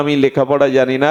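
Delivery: quick, dismissive tone.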